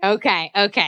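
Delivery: ordinary delivery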